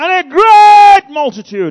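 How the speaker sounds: all-out, very loud, high-pitched scream. Right after saying 'I will scream it': screamed. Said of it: "I will scream it".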